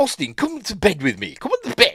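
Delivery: put-on annoying, very high, swooping posh drunk woman voice. Retelling a film scene where a woman asks Austin to bed, annoying posh woman voice. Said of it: "she has a really annoying posh bird voice".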